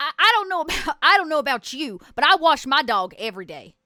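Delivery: put-on very loud, high-pitched Southern woman's accent. Retelling what a woman in a scene said, in a southern accent. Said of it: "she had a southern accent".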